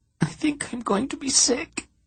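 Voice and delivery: very high, small, trembling quivering voice. Reading a story, a nervous character before a speech: quivering little voice. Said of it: "she said in a quivering little voice".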